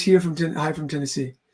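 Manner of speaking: ordinary delivery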